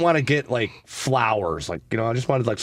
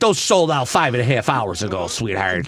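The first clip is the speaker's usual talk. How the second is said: put-on smoker-sounding woman's voice; 4 dB louder than usual. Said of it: "You made her sound like one".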